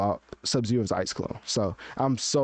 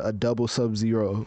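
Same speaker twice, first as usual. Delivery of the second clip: plain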